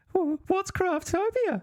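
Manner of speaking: very high, tiny, shrill little creature voice. Retelling a pushy man's pitch and your own reply, shrill little hobbit voice. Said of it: "you say in your shrill little hobbit voice".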